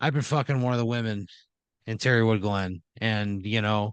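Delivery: ordinary delivery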